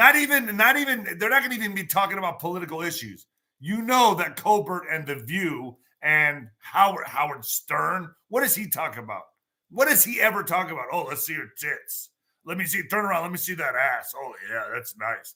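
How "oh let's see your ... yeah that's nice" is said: exaggerated, sleazy club DJ patter voice. Mocking what a radio host talks about: Howard Stern impression. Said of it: "That's Howard Stern for you".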